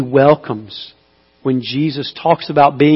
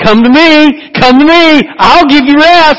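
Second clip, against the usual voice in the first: very loud, very high, drawn-out calling yell; 12 semitones higher, 10 dB louder than usual. Speaking to listeners about rest and grace, voicing His call as a yell. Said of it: "And He's yelling".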